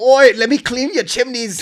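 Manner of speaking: exaggerated broad Cockney accent, very high pitch. Imitating an actress's character with a made-up line: super Cockney accent. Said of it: "Super Cockney".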